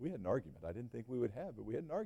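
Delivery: soft, sheepish, confessional tone.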